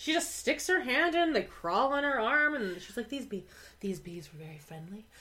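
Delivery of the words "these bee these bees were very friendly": dreamy, soft, hushed ASMR voice, murmured softly. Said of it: "the way she says bees is".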